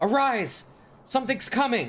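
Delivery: high-pitched, alarmed, shouted call. Voicing a hunter on watch waking the sleeping group: calling out a warning. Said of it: "you hear the sound of, of Heen call out".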